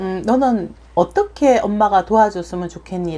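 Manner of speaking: normal talking voice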